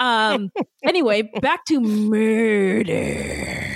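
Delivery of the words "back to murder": eerie acted crime-documentary narration. Returning to the murder topic after a tangent: Dateline narrator impression. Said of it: "did I sound like the dude from Dateline?".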